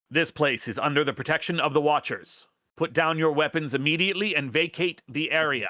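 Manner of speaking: shrill, screeching, metallic, mechanical drone robot voice. Game master voices a drone, screeching metallic voice. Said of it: "a metallic voice just screeches out of one of the drones".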